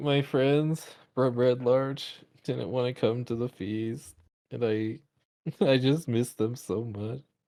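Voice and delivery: tearful delivery, sobbing through the words. Another character asks what's the matter, and Lemon Lime answers, crying. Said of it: "finds Lemon Lime crying".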